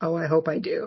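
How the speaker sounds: imitated sarcastic tone. Retelling what Jules said to Lucy: retelling a sarcastic line. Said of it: "Jules sarcastically says".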